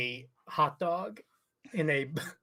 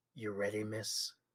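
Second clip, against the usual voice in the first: hushed, very low, gravelly noir detective voice; 7 semitones lower, 11 dB quieter than usual. Retelling a character offering something to someone, gravelly hard-boiled detective voice. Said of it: "a hard poached detective voice".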